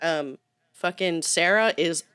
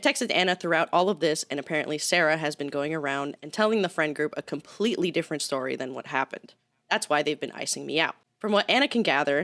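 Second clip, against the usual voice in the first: ordinary talk, nothing marked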